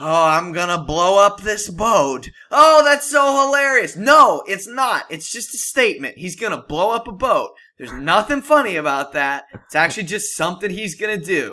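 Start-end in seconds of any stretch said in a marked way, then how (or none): 0.0-4.0 loud put-on laughing, hamming it up. Retelling two moviegoers laughing at Joker lines: imitating laughing moviegoers. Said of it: "they're yucking it up, like".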